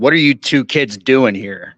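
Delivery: short, curt, clipped tone. Retelling what they asked two kids: imitating own curt tone. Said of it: "I was kind of curt in my tone of voice".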